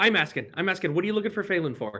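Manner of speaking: very fast, high-pitched, rattled-off talking. Voicing a stranger pressing the party about Phelan: talking very fast. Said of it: "this guy is talking very fast".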